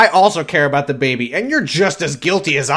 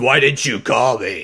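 slow, drawn-out, throat-straining put-on voice; 3 semitones lower than usual. Quoting a character's angry question in a new voice: Ben voice. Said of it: "This is my new Ben voice".

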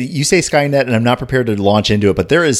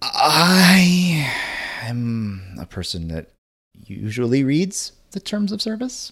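very slow, soft, sheepish delivery, long drawn-out I; 6 dB quieter than usual. Telling a story about a podcast service's terms, admitting it sheepish. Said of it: "I'm saying that sheepishly".

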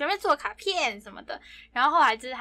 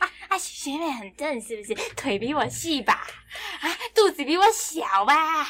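petty, jealous, super annoying whining voice; 2 semitones higher than usual. Acting out jealous questions about the junior schoolmate: imitating a super annoying tone. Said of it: "用这种超讨人厌的语气".

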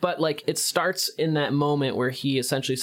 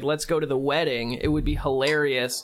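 ordinary delivery

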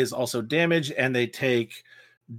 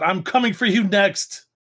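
acted, raised, high half-yell called across; 8 semitones higher, 5 dB louder than usual. Voicing a fighter who throws strife onto Kyo: yelling a threat in character. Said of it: "As she kinda yells out".

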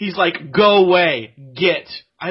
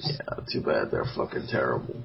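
play-acted defeated, worn-down, breathy near-whisper; 10 dB quieter than usual. On a podcast, a host acts out another man's reply, mock-defeated. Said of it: "You sounded so defeated".

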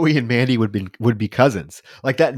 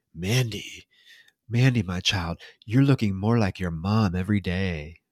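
really creepy, unsettling delivery; 5 semitones lower, 8 dB quieter than usual. Retelling a movie scene where a man stops to comment: imitating a creepy comment. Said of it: "make this really creepy".

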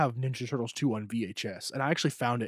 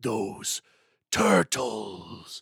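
put-on intimidating villain voice, louder; 5 dB louder than usual. Quoting the villain Shredder's movie lines: intimidating Shredder voice. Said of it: "in such an intimidating voice".

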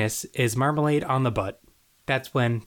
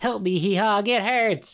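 mock scream, high-pitched, long and drawn out; 8 semitones higher than usual. Recapping a show, quoting Half-Life screaming to He-Hog: imitating Half-Life screaming. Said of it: "Half-Life is screaming like".

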